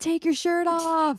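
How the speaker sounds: hollered call, pitched very high. Retelling what her husband shouted at an acoustic set: imitating someone yelling. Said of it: "all you hear is my husband over here yelling".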